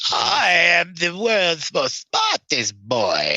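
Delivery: put-on swooping, pitch-swinging cartoon boy-genius voice. Speaker trying a cartoon voice after a long time: Dexter voice. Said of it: "since I've done a Dexter voice".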